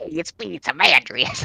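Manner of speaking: put-on voice, younger sounding and scrappy. Role-player gets back into character and introduces himself: younger, scrappy Amandrius voice. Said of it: "He should be younger and more scrappy sounding".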